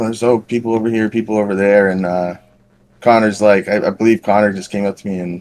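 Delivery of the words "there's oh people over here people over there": ordinary talk, nothing marked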